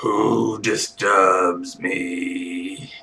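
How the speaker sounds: low, rumbling, resonant voice. Retelling a scene, voicing the psychic voice that answers the scan: rumbling psychic voice. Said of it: "the rumbling voice says".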